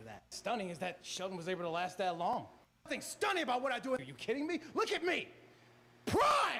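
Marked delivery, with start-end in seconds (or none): 2.8-6.6 shrill, very high, very slow, stretched-out yelling. Answering a question about detractors, yelling. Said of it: "you can't be yelling like that".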